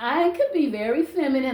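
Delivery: normal talking voice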